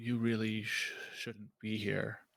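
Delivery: gentle, soft-spoken, hushed voice. Narrating a scene, the speaker voices a woman behind the snooping listener, soft voice. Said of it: "you hear a soft voice behind you say".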